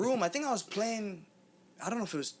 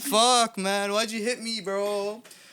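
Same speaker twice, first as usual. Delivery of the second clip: slow, drawn-out crying, sobbing through the words; 3 semitones higher, 6 dB louder than usual. Recalling getting hit as a kid, the speaker acts out his past self: imitating crying. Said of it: "start crying like a little bitch".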